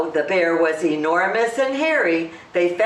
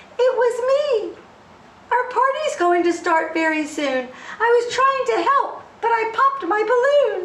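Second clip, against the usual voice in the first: small, trembling voice way up high. Reading a story aloud, Hare answers the angry bear in a small, shaky voice. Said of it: "Hare said in a small, shaky voice".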